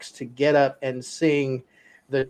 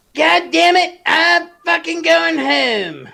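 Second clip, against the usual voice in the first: very high, creaky, loud, slow put-on cartoon voice; 14 semitones higher, 5 dB louder than usual. Showing off a South Park impression for the group: Cartman voice. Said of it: "I can actually do the voice of Cartman".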